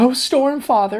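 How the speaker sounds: very high, frightened, terrified shout. Retelling a terrified character's reaction to unseen creatures: imitating a character shouting. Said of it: "she just shouts out".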